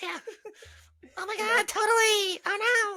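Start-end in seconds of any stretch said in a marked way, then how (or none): 1.2-3.0 put-on chipmunk voice, higher. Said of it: "it just gives her a chipmunk voice".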